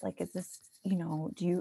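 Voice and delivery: soft, quiet, secretive tone. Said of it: "like, kinda quietly".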